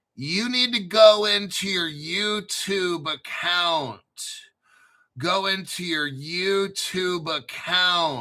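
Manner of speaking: very slow and deliberate, spelled out word by word. Speaker explaining donation screenshot steps to someone, very slow. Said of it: "I'll say it real slow".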